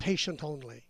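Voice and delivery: ordinary delivery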